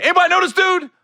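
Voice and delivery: loud, high-pitched yelling. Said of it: "he yelled out".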